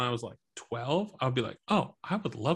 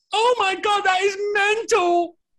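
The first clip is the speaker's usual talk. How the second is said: put-on very high, very loud, helpless, uncontrollable laughing fit; 9 dB louder than usual. After offering an impression, performing Ricky Gervais laughing uncontrollably. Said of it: "my impression of Ricky Gervais laughing uncontrollably".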